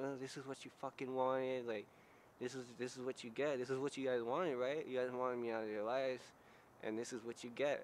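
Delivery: mock seething, angry, blaming, accusing rant. Speaker retells their dad screaming at them, retelling an angry scream. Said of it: "My dad was just like screaming at me like".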